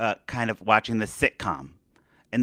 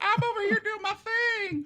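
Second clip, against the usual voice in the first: put-on Southern accent, higher and quieter; 5 dB quieter than usual. Retelling a voiceover recording for a fighting scene: put-on Southern accent. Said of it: "All of your voice work is very Southern".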